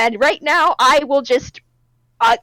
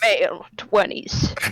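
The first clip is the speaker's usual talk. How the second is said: film noir detective narration voice, lower and quieter; 6 semitones lower, 5 dB quieter than usual. Examining a body as the lights go down: detective noir voice. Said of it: "starts talking like it's a fucking detective noir case".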